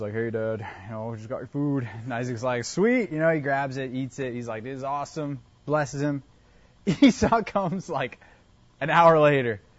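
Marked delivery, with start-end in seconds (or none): 0.1-1.9 quiet, soft disguised voice. Retelling a son tricking his father by posing as his brother, best Esau voice. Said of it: "He does his best Esau voice".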